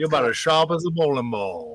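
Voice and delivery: swooping Southern accent, cartoon-rooster voice. Describing kinds of Southern accents, speaker does a Foghorn Leghorn impression. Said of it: "Foghorn Leghorn".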